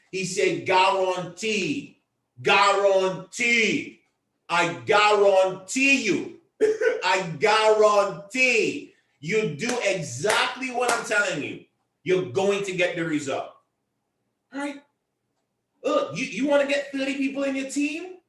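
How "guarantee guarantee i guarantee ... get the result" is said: put-on deliberate, unhurried Nigerian accent. Quoting a colleague who said the line, imitating his Nigerian accent. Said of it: "in his Nigerian, um, accent".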